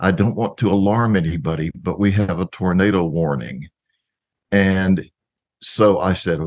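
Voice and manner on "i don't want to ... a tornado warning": whispering, pitched down. Retelling how someone on stage leaned over during a concert: imitating a whisper. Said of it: "leaned over and whispered at me".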